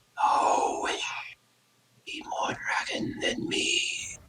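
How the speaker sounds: close, very hushed, ghostly whisper. Describing a voice heard as you turn around, whispering right behind you. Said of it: "like it's someone whispering right behind you".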